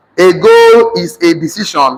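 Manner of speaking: normal talking voice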